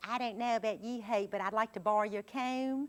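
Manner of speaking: put-on Virginia teenager accent. Showing how Virginians aged twelve to twenty-one talk: Virginia teenager accent. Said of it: "every Virginian says".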